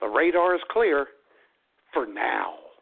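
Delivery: ominous, menacing radio weatherman delivery. Recalling a radio weather report heard while driving, imitating a menacing radio weatherman. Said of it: "with the menacing tone for now".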